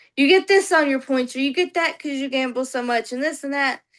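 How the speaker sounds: ordinary delivery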